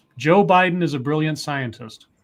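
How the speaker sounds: plain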